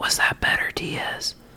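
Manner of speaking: whispered speech. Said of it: "Why are we whispering?".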